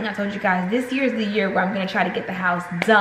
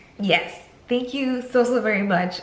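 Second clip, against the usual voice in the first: choked-up voice, fighting back tears. Thanking viewers for supporting the channel and family, holding back tears. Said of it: "I'm not gonna cry".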